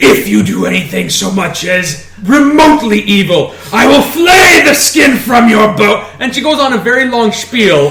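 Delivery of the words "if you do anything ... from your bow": acted-out savage, feral, menacing wild-animal manner. Retelling what she said while holding the blade at the urn: a feral threat. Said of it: "in her most feral voice".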